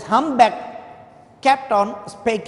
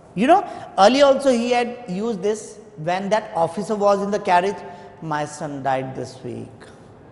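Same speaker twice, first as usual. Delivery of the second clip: normal talking voice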